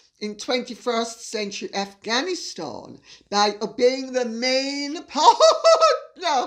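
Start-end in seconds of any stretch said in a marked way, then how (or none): 4.1-6.5 loud, slow words, cracking up laughing mid-phrase. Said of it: "Sorry, sorry, I'll read that again".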